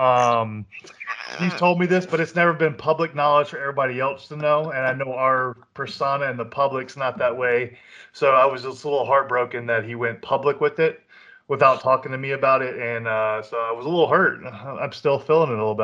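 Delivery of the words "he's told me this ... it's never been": usual speaking voice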